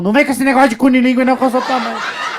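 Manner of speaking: fast, loud, laughing scolding tone.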